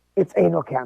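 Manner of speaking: ordinary talk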